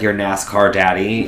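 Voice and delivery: normal talking voice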